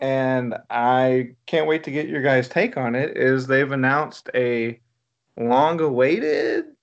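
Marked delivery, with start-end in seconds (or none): 5.4-6.6 high, upward lilting tone on "long-awaited". Announcing a Labyrinth sequel, with a shrug; inflected high tone on long-awaited. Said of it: "I say that with a shrug and an inflected high tone".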